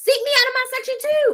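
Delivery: heated, forceful, pushed up high and hard.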